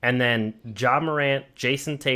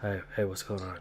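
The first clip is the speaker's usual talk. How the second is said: furtive, sneaky, secretive, guarded tone; 6 semitones lower, 11 dB quieter than usual. Imitating how a friend answers phone calls: imitating a secretive tone. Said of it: "He always makes it sound secretive".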